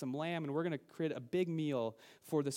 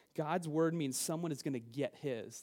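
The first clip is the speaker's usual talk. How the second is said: normal talking voice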